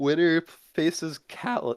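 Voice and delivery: voice cracks mid-line, jumping up high. Announcing the next match-up, the speaker's voice cracks. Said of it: "Oh my fucking voice crack".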